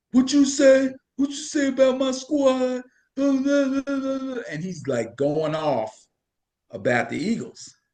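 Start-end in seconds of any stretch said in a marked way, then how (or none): 0.1-2.8 loud, very high-pitched mock confrontational tough-guy voice. Retelling a big fan coming over: imitating a loud deep-voiced man. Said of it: "the dude was loud. He had a real deep voice".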